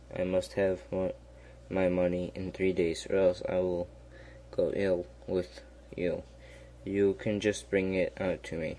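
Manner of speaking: usual speaking voice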